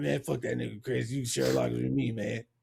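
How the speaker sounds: low, rough, creaky, raspy murmur. Retelling what his friend said to him at school, Turner Green's raspy voice. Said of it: "Why you gotta do his raspy voice".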